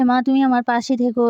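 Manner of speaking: ordinary delivery, nothing marked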